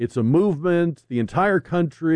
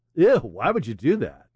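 disgusted, openly distasteful, reproachful tone; 4 semitones lower than usual. Mocking news coverage of riots, mock-disgusted Jake Tapper impression. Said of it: "Jake Tapper style".

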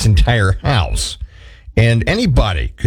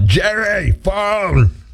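high, loud, carrying calling yell; 8 semitones higher than usual. Retelling how the person answering the phone called the friend over: retelling a yell. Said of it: "Anderson would yell".

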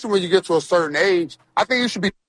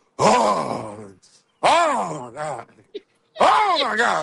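exasperated huffing, slowing on the middle "oh my God". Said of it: "I just keep smacking my lips and huffing and puffing".

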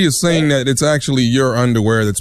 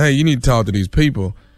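normal talking voice

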